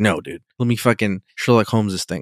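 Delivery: plain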